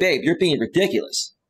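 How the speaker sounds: ordinary talk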